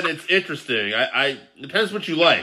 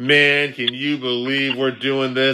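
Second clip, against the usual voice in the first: put-on muttered aside, under the breath; 3 semitones lower than usual. Retelling what one wrestler said to his opponent before their first match, muttered under breath. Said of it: "under his breath".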